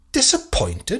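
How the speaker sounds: icy, cold tone, very high pitch. A man challenges a lord who has just admitted his disappointment, speaking coldly. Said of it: "said Holmes coldly".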